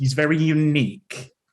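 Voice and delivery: put-on proud, doting voice. Imitating how parents describe their child: put-on proud parent voice. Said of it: "the way parents describe things".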